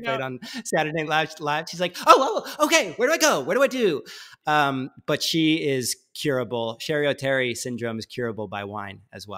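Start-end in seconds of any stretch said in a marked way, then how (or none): 2.1-4.0 put-on, very high, frazzled, swooping flustered panic. Describing her stressed traveler alter ego, imitating a stressed-out traveler. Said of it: "super stressed out traveler mode".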